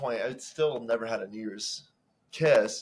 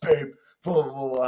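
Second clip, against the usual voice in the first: mock-angry man's voice, louder and higher; 3 semitones higher, 3 dB louder than usual. Retelling a run-in with a pissed-off bartender or security guard, imitating an angry man. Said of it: "He's pissed off".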